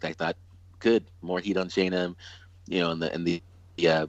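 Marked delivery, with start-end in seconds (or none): none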